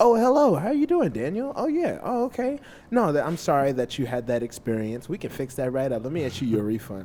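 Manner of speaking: loud, courteous, polite customer service voice. Demonstrating switching between a work voice and a casual voice, customer service voice. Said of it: "your customer service voice".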